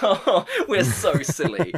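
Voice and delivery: mock, very slow, high sing-song, laughing through words. Imitating the priest and protagonist laughing at themselves: imitating characters laughing. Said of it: "just start laughing".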